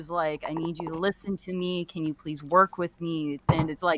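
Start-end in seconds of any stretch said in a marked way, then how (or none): 0.5-3.4 put-on soft, gentle tone, much quieter. Comparing two characters, acting out the second one's words in a softer tone. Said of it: "it's even a softer tone".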